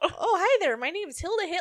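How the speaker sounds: very high, loud Chicago accent. A speaker voices an invented woman introducing herself, Hilda Hitler, Chicago accent. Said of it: "judging by her accent".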